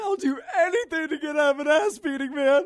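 very high, loud, teary, near-tearful pleading. Retelling a man on his knees begging to avoid a beating, imitating someone almost crying. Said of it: "like almost crying".

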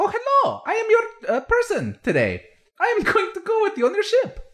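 cheery, chipper, very high, swooping tiny creature voice. Voicing a small bonsai-like person greeting the group about their ship, chipper little voice. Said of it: "with a chipper little voice says".

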